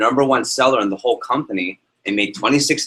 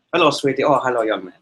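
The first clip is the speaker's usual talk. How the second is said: put-on Indian-accented, gentle voice. Recalling a college physics professor's greetings to students, imitating Dr. Bhagat's Indian accent. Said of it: "he talked like this to all the people".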